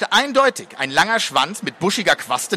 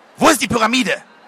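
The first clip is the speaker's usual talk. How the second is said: high-pitched hissing through the teeth; 5 semitones higher, 3 dB louder than usual. Narrator reads a woman's line after she shuts the door behind her: hissed. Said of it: "schloss die Wohnungstür hinter sich und zischte".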